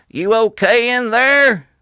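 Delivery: very high, very loud, slow southern drawl. Retelling a bystander asking after a car crash: imitating a southern accent. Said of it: "my southern accent come out".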